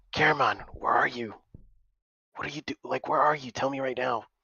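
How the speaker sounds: hushed, breath-only, half-whispered calling voice. A character calls out to someone they can't see, half-whispering. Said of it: "I'm trying to whisper".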